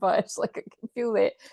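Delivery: words spoken through laughter. Reading cards aloud, laughing while talking. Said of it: "sorry, I keep laughing".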